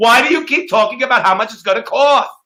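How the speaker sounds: put-on high, whiny, bratty, sulking childish tantrum voice. Mocking how some people react, in a mock childish hissy-fit voice. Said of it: "they do it in that voice. And they do it with that kind of hissy fit, kind of childish thing".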